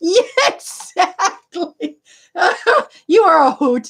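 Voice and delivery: speaking through heavy laughter.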